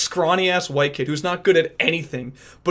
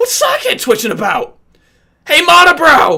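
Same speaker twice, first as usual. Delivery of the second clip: put-on cartoon kid voice, much higher and louder; 11 semitones higher, 10 dB louder than usual. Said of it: "you kind of just gotta go like this".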